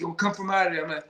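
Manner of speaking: half-yelled, mildly loud, aggressive tone. Retelling how a gym owner yelled at them to come out: imitating Ray yelling. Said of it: "started yelling at us".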